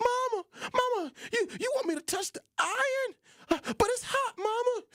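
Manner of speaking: put-on tearful child voice. Retelling being told to touch a hot iron, the speaker pleads with mama, acting out crying. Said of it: "tears began to drop down my face".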